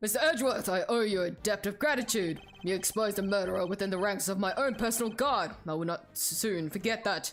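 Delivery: commanding, stately presidential voice. Reading a game character's dialogue aloud, booming voice. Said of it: "I gotta do your booming voice again".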